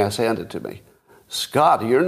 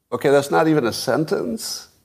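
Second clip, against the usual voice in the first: plain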